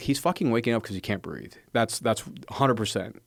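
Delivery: plain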